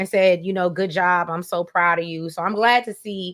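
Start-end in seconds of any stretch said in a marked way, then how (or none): none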